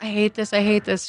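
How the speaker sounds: acted-out tearful words cried out mid-sob. Retelling what a crying woman in bed said, imitating someone crying. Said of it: "she's just crying and she's like".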